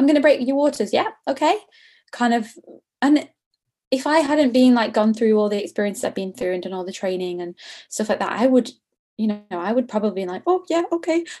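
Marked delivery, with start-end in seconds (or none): 0.0-1.1 offhand, breezy, really casual, pitched-up tone. Recounting what the labor ward consultant told her, mimicking a really casual tone. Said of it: "she said it in that really casual way".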